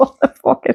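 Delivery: high, laughing exclamation.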